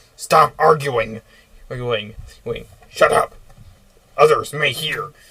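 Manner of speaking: loud bossy goblin voice. Narrating a scene, voicing a goblin bossing the others: much louder goblin voice. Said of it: "a much louder voice appears".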